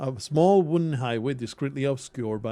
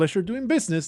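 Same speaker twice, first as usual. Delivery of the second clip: high, fawning, ingratiating little mouse voice; 7 semitones higher than usual. Narrating a game, the mouse closes a trade with the player, in an ingratiating voice. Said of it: "the mouse says in an ingratiating tone".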